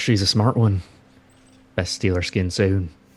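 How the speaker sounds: hushed, whispering voice. Whispering to the captain in character while walking away: whispering. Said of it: "I whisper to the captain".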